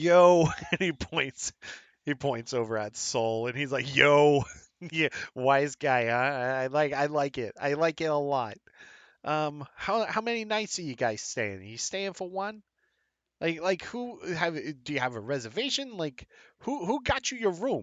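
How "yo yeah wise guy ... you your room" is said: put-on Boston accent. Retelling how a man questioned the group checking in, in a Bostonian accent. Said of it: "a Bostonian accent".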